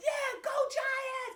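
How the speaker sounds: acted shrill, very high screaming cheer. Retelling how a lady at a birthday at the bar screamed at the TV: imitating someone screaming. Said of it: "screaming at the T V".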